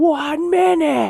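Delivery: very high, shrill, very loud scream-roar. Retelling how she answered the officer's third knock: imitating a roared scream. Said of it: "she screams, roars".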